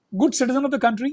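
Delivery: ordinary delivery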